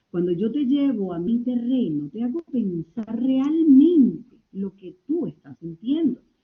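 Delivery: soft, gentle, velvety voice with frequent pauses. Demonstrating how the voice should sound when guiding someone: soft velvety voice with pauses. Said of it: "más tenue, más bajo. Debo aterciopelar mi voz y sobre todo hacer pausas".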